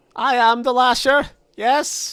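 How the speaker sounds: put-on German accent, pitch way up, loud. Playing a game, the speaker announces being the Lasher: Lasher voice, German accent. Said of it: "I sound all German and stuff".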